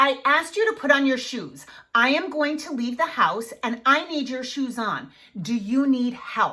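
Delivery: steady, very firm, calm no-nonsense voice. Showing parents how to tell a child to put shoes on, very firm instruction. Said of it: "I was very firm".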